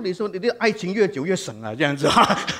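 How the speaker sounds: said in a loud voice.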